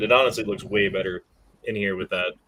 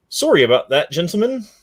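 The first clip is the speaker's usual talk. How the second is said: loud, high, fake British accent played for laughs; 7 semitones higher, 5 dB louder than usual. Bantering with co-hosts who tease the accent, in a fake British accent. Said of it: "That's fucking British or something".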